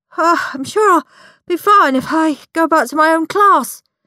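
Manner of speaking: gasping out the words. Narrator reading Horrid Henry's reply to Milksop Miles and Miss Lovely, gasped. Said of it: "gasped Horrid Henry".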